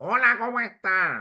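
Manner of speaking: talking right through the nose, strongly nasal, pinched. Explaining idiolects, showing how some people talk: nasal voice. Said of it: "hay personas que tienen la voz nasalizada. O sea, hablan así".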